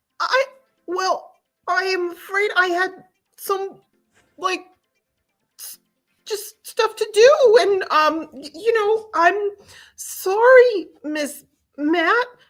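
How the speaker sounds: high-pitched, stumbling, faltering speech. Acting out a scene with another speaker: Kermit the Frog voice. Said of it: "Kermit Frog here".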